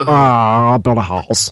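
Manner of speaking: put-on mumbling voice. Showing the others what a Jack voice sounds like: Jack voice. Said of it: "Jack voice is like".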